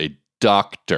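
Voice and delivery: mocking, sarcastic scare-quote tone. Repeating the word doctor, sarcastic air-quote tone. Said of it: "I'm using air quotes in my voice in case you couldn't tell".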